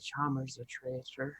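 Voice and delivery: muttered under breath. Being carried away by Darius in the game, muttered under breath. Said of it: "mumble under my breath".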